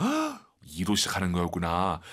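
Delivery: ordinary talk, nothing marked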